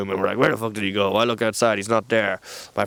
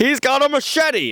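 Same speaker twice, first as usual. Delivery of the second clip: play-acted, shrill, very high-pitched scream; 3 dB louder than usual. Retelling a friend's alarm when the man picked up an umbrella: imitating a friend screaming. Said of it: "My friend screams".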